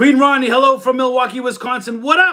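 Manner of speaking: yelling at full voice. Livestream host reading out a viewer's super chat greeting, yelling. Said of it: "if I'm too loud because I'm yelling".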